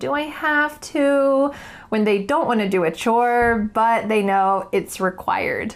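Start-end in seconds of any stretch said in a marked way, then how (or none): 0.0-1.5 put-on whiny child voice, dragged very slow. Explaining a common question children ask about chores, the speaker shows the whining tone. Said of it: "children will often ask in this whining tone".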